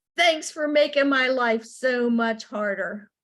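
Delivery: loud, exasperated fatherly yelling. Retelling how a father yelled at a TV ad: imitating a dad yelling. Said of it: "just yelled at the T V".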